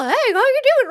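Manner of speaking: very high, tiny little gnome voice. Showing the voice given to a little gnome helper, a Butters-style gnome voice. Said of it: "you've got a little gnome".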